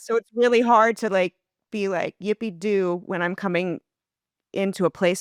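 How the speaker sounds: crying through the words. Speaker opening up to someone who calls her sweetheart, crying. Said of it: "Sorry, I'm crying".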